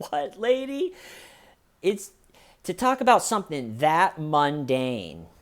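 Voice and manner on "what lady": very high, squeaky, giggling through the words. Retelling how a suspect laughed at an interrogator: imitating someone laughing while talking.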